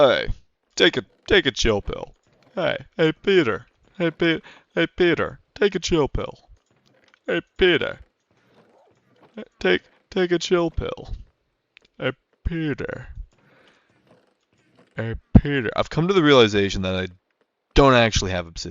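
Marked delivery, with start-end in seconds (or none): 0.0-15.7 pitched-up, raised cartoon voice. Speaker asks listeners if they like it, then keeps going in Joe Swanson voice. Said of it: "do you guys like my Joe Swanson voice".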